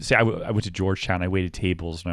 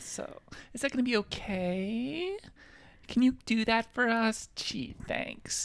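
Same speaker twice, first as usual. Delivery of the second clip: stuffy slow upspeak, okay stretched long and rising; 6 dB quieter than usual. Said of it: "up talk and do it slowly".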